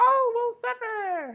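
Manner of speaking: very high, loud, slow squeaky voice. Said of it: "Oblivion sounds like / squeaky, high-pitched voice".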